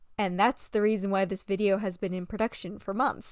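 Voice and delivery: ordinary talk, nothing marked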